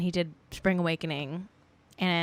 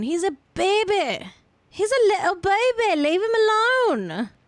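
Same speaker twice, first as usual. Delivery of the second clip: very high, sing-song, put-on British accent; 12 semitones higher, 4 dB louder than usual. Speaker drops into an accent mid-story, British accent. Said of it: "That's my British accent".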